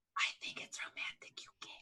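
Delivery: hushed, very quiet whisper, right at the ear. Leaning in close to another character to whisper: whispering. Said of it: "and I'm gonna whisper".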